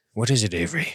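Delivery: hushed low voice. A character sits down by the hearth and asks Avery a question, in a lowered, quiet voice. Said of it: "I lower my voice and quiet down".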